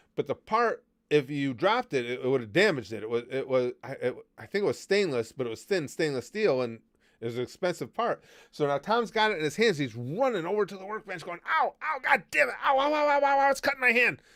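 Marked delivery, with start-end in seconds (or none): 11.5-14.2 very high, acted pained yelling and yelps. Retelling Tom carrying a sharp steel part to the workbench, imitating Tom yelling in pain. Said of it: "he's yelling the whole time".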